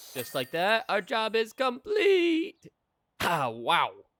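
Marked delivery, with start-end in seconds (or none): 0.1-2.7 voice cracks, much higher, louder and slower. After finding the second item, announcing the job is complete, voice cracking. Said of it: "That was a voice crack and a half".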